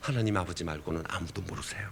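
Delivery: soft, hushed whisper.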